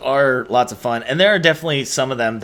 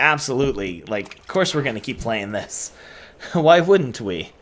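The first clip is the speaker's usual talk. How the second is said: normal talking voice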